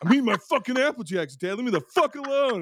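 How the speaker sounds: put-on very high, mouthy bratty kid with attitude. Retelling an old cereal commercial, imitating a kid with attitude. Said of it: "how much attitude those kids".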